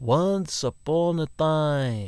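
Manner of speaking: rich, very slow, drawn-out, mysterious voice. Narrator reading a story voices the dragon's opening words, Red Gold Dragon's mysterious voice. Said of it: "he had a richly mysterious voice".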